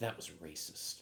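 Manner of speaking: muttered, hushed, barely voiced whisper. Voicing a character's quiet remark: whispering under her breath. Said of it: "whisper under her breath".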